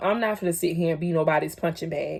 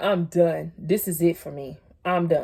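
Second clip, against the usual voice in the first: mock crying voice, slow, tearful and defeated. Retelling sitting in a friend's car after a fight: retelling own crying words. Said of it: "I'm sitting in her car and I'm crying".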